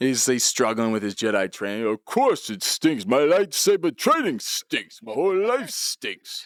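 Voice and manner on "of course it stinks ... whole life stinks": beaten-down boxer voice. Acting out Rocky down on his luck in Jedi training: Stallone doing Rocky voice. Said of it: "this is Rocky down on his luck".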